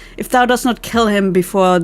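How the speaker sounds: plain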